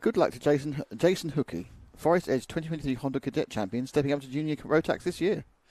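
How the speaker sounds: very fast, soft, rushed rattle-off at top speed. Giving a good-luck shout-out to a karting champion, very fast. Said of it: "you said that very, very quickly".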